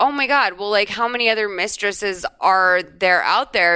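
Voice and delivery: ordinary talk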